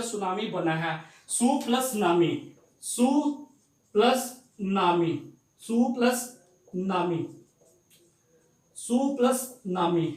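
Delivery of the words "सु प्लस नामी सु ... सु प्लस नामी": slow su nami, split into syllables. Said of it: "दो word से मिलकर".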